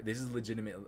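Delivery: normal talking voice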